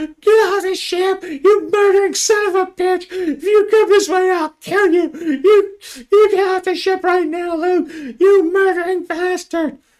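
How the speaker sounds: very high, shrill, terrified, panicked shrieking. A terrified woman berates a man over the ship's intercom, panicked screaming. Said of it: "screaming in this panicked voice".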